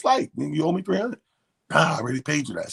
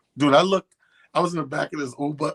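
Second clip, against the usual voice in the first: ordinary delivery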